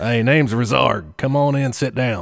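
put-on real down-home country accent, easygoing. Voicing the character Razarg inviting someone in, in a country accent. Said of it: "I'll give him a real country accent".

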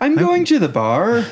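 slow Irish lilt, statement rising at end. Showing how an irish accent makes statements sound like questions: irish accent rising like a question. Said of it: "Irish accent as they're always asking a question".

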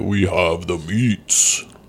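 slow, drawn-out, deliberate delivery. Describing an Arby's commercial: Ving Rhames impression. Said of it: "And then you get".

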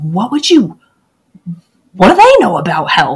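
put-on loud, swooping, lively New Jersey accent. Retelling a doctor's answer in a Q and A: Dr. Fuhrman impression, New Jersey type accent. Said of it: "a New Jersey type accent".

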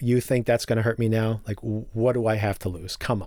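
put-on scoffing tone. Recapping a show, acting out a character scoffing at the man photographing him. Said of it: "Tom just scoffs at him".

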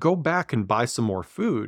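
ordinary talk

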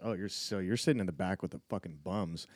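normal talking voice

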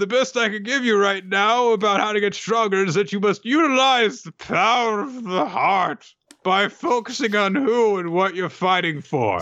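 high-pitched, put-on tipsy drunk master voice. Retelling a scene where the sensei advises how to get stronger, mock-drunk sensei voice. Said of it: "you sound drunk".

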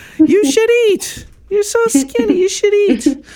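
put-on, imitated old woman voice.

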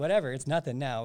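ordinary talk

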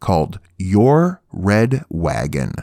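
slow, low, deliberate, each word carefully drawn out. Saying a title so it isn't misheard; said slowly. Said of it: "I had to say that slow".

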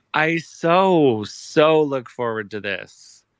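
very slow drawl dripping with sarcasm on "so". Answering a co-host who says you look forward to this: sarcastic. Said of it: "and that was sarcasm".

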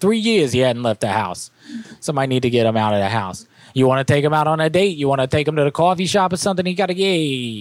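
put-on Boston accent. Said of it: "That Boston accent keeps going in and out".

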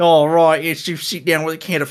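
clumsy put-on Australian accent. Joking about how a kids show executive would react, in a bad australian accent. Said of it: "my shitty Australian impression".

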